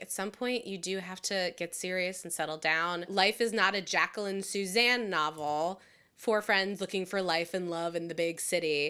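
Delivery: plain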